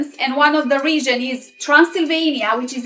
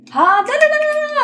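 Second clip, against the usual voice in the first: very high, fast rattled-off da-da-da chatter; 14 semitones higher than usual. Describing regional Romanian speech, imitating how people there talk, very fast speech. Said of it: "people speak so fast".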